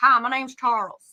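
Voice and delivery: muffled voice, talking with mouth full. Showing another speaker how to say the line: talking like with an apple in mouth. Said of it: "like you're talking, but you got, like, an apple in your mouth".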